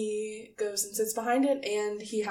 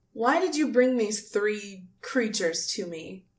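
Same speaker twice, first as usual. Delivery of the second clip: scornful, sneering, contemptuous, looking-down tone. Voicing a haughty figure questioning Guile: sneering, contemptuous tone. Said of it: "when he says creatures, he kinda sneers".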